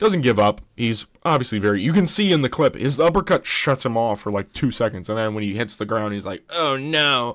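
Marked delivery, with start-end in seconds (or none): 6.5-7.4 mock whiny baby voice, pitched much higher. Describing a knockdown in a fight clip, speaker voices the fallen fighter: whiny Grant Dawson impression. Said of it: "It's my Grant Dawson impression".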